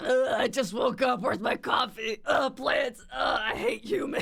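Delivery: put-on detestable, grumpy gremlin voice. Speaker contrasts a cutesy persona with their real self, detestable gremlin voice. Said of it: "I'm more of a detestable gremlin".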